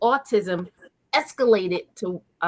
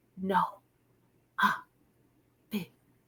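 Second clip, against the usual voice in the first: put-on breathy child whisper, much quieter; 9 dB quieter than usual. Retelling how the speaker's son used to talk, imitating a breathy, whispery child. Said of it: "talking breathy and whispery".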